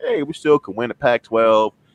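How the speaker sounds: ordinary talk, nothing marked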